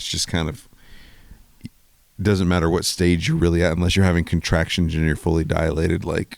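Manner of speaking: ordinary talk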